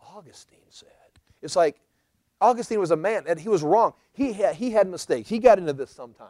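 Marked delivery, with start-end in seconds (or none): 0.1-0.9 very quiet, trembling, quivering hushed whisper. Mocking how some people quote others, with a slight quiver in voice. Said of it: "don't say it with that little quiver in your voice".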